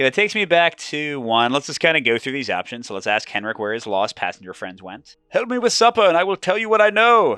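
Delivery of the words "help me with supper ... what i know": very high, put-on Norwegian Oslo accent. Play Henrik, being asked where his lost passenger friends went, in a put-on Oslo accent. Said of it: "what an Oslo accent sounds like".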